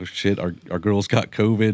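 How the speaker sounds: ordinary talk, nothing marked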